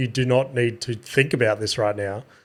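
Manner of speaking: plain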